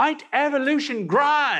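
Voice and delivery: put-on very high, gushing, excited Australian accent. Mimic a man who has just talked about an animal and its ecosystem, imitating an excited Australian accent. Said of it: "in that excited Australian accent".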